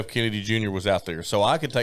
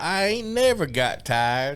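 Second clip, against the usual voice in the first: poor put-on Southern accent, pitched higher; 6 semitones higher than usual. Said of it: "in a very poor Southern accent".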